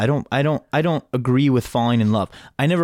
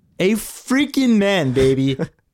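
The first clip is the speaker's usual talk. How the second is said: very slow, high-pitched Midwestern guy voice; 7 semitones higher than usual. Doing an impression for others to guess, imitating Micaiah. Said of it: "You sound like a Midwestern guy".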